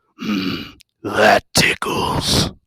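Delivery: darkest, gravelly, raspy demonic voice. Retelling what a grinning thing said to you, in a dark gravelly voice. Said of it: "in like the most dark gravelly voice".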